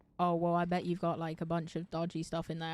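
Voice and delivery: ordinary talk, nothing marked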